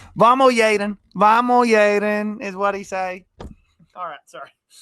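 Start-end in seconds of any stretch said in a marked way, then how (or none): 0.2-2.4 very loud, slow, clumsy, fake Spanish accent. Retelling what a man kept saying to Yaden, failed attempt at his accent. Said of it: "I cannot do the accent".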